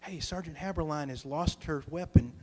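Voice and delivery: soft whispering voice. Soldier retelling going around to the other soldiers, retelling a whisper. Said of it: "I start whispering to the other soldiers".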